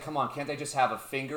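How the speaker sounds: ordinary talk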